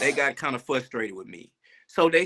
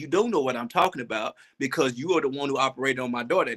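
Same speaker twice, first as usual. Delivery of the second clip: ordinary talk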